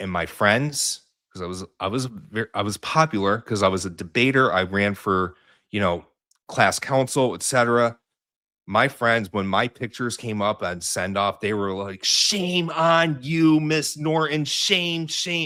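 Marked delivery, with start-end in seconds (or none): 12.0-15.5 put-on screaming, higher. Retelling how friends reacted at a send-off: imitating friends screaming. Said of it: "my friends were, like, screaming".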